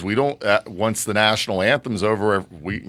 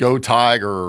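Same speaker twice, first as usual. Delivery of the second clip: usual speaking voice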